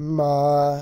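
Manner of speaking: ma held flat at even pitch, first tone. Tone lesson, starting tone to center yourself: level flat tone on 'ma'. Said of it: "the starting flat tone".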